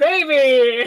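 very loud, booming, drawn-out fighting-game announcer call. Jokingly declaring someone the baby: Smash announcer voice. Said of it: "Smash announcer voice".

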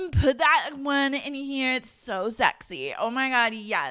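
put-on very high, squealing, drawn-out, very drunk shout. Retelling drunk team members shouting at a video editor: imitating Daisy drunkenly shouting. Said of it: "they're all just shouting things at him".

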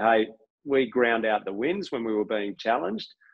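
usual speaking voice

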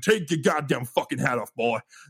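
put-on menacing host voice. Retelling what the actor playing Jack Baker said at the table: imitating Jack Baker. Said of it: "He's like".

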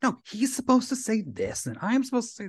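high-pitched grumbling mutter, spoken under the breath. Retelling a TV character walking the wrong way down the hallway, imitating someone muttering. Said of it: "He's just like muttering like".

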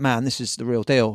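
plain

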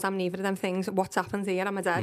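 ordinary delivery

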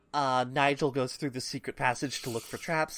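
usual speaking voice

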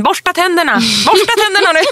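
high, rushed, play-acted parent yelling. Speaker recalls getting the kids ready for a bedtime story; retelling yelling at the kids. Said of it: "och skrek åt barnen".

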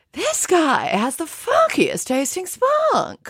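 very high, swooping, slow, drawn-out sing-song delivery. Doing an impression of an actress from Sex and the City: Kim Cattrall impression. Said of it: "Can I do an impression of Kim Cattrall from Sex and the City?".

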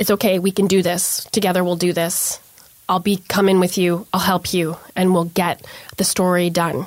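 normal talking voice

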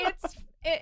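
high-pitched, speaking through laughter. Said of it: "And I'm like".

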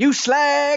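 put-on very high, shrill, loud, furious angry yell. Recounting how a kid on a bike shouts at her, retelling a kid's shout. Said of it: "He says".

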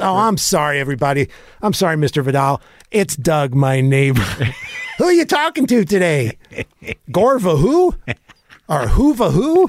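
chummy, friendly voice with a swooping tune. Retelling how someone barged into the host's conversation with a guest: neighbor from behind a fence. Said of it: "like the Tim Allen neighbor from behind a fence".

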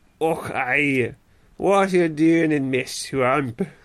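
put-on Scottish ogre accent. Retelling a story about a Scottish carrot, a speaker retries the accent with a Shrek-style Scottish accent. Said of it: "Think of Shrek".

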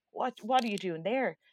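ordinary talk

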